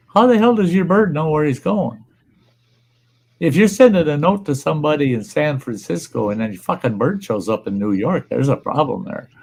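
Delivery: plain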